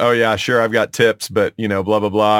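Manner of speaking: normal talking voice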